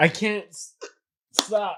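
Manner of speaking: very loud, very high hiccuping break in voice. Speaker with hiccups on the mic, hiccuping while talking. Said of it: "Hiccuping on the mic".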